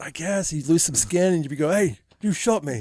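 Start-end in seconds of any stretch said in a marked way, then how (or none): 1.7-2.8 sudden put-on English accent. Retelling a wounded hermit's line from a film: imitating a sudden English accent. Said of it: "why does he get an English accent all of a sudden".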